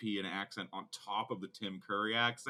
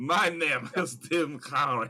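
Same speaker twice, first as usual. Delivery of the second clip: put-on Romanian accent, very loud, drawn out slowly; 5 semitones higher, 8 dB louder than usual. Imitating an actor's accent from the movie: imitating Tim Curry's movie accent. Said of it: "Essentially his accent for the whole movie".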